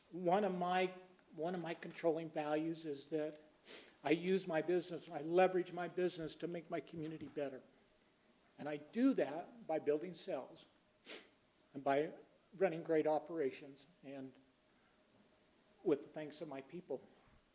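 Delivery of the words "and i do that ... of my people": emotional, halting voice choking up mid-phrase. A business owner speaking about their business values, getting emotional. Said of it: "I'm getting so emotional".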